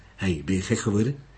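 ordinary delivery, nothing marked

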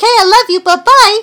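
high, loud cartoon voice. Quoting cartoon characters one by one: Mindy voice. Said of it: "like Mindy".

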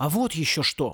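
plain

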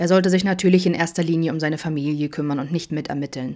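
plain

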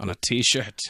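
poorly done put-on Irish accent. Repeating a line to put on a t-shirt, in a bad irish accent. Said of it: "I can't do an Irish accent".

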